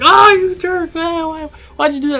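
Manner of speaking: acted crying, tearful voice. Retelling being hit in the head by a bottle: imitating own crying. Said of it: "and I started to cry".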